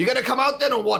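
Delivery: quick, high-pitched, goading and teasing tone. Calling out to a shadow figure in a scene, taunting. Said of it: "I'm gonna sort of taunt him like this".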